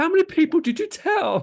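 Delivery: very high-pitched, exasperated squeaky voice. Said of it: "Travis Kelce's like".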